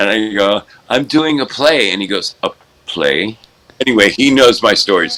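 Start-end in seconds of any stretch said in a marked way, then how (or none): 0.9-1.9 put-on fabulous voice, much higher pitch. Retelling telling someone about doing a play, in a fabulous voice. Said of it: "in my fabulous voice".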